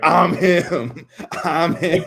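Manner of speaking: high, loud screaming. Retelling a guy in Philly yelling at the fans, imitating someone screaming. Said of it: "just like screaming at the fans".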